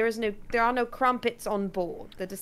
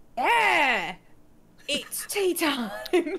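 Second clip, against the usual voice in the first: high, very slow, very drawn-out mascot-style cry; 7 semitones higher than usual. Joking about a creature smashing through the ship at tea time: Kool-Aid Man voice. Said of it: "Just go full Kool-Aid man".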